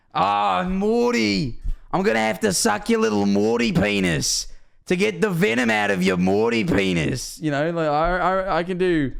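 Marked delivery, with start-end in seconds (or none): 0.2-7.4 put-on Australian cartoon voice, high and rough. Quoting a cartoon scene: Australian Rick voice. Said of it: "that's Australian Rick from Bushworld Adventures".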